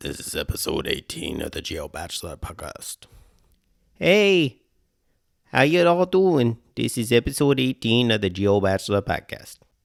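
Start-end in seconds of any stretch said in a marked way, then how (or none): 0.0-3.0 rough, creaky, raspy delivery. Introducing a podcast episode as a superhero: Batman voice. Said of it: "I'm Batman".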